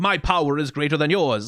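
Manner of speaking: mock standoffish, demonstrative, boastful tone. Describing how a female character might boast of her power, mock-standoffish boast. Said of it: "demonstrative and standoffish".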